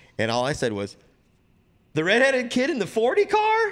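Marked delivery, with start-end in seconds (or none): 2.0-3.7 mock, very high-pitched, stunned, incredulous disbelief. Retelling his reply to the team owner's driver decision: retelling own disbelief. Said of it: "in total disbelief".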